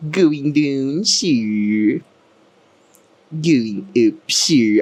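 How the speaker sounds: low cartoon-dog drawl with sir drawn out. Speaker shows their favorite impression, Droopy manning the elevator, in a Droopy impression. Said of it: "I'm just like".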